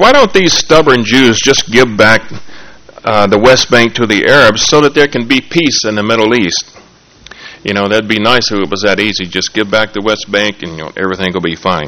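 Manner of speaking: ordinary talk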